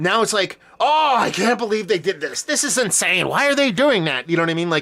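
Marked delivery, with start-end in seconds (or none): 0.8-4.3 showy, hammy, pitched-up TV game announcer call. Imitating how Tony Romo calls games now: imitating Tony Romo's showy game calling. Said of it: "Now it's a little bit showy".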